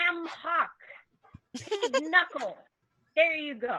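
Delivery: very loud, high call-out. A tavern woman setting soup down in front of guests, loud. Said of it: "she's loudly going".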